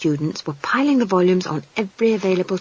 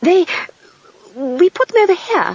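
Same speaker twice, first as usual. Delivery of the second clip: very high, nervous, halting, stuttered start; 11 semitones higher, 4 dB louder than usual. A wizard answers a demand about where the missing children are, stuttering. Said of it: "And stop stuttering".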